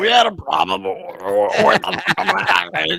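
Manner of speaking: slow, rough, creaky voice. Repeating another speaker's joke line: RFK Jr. voice. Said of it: "that sounded".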